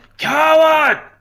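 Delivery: high-pitched, loud yell. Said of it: "I'm gonna yell".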